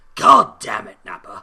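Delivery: terrible deep warrior voice, shouted low and loud. Talking about a Dragon Ball game, doing a terrible Vegeta impression. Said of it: "Terrible Vegeta impression".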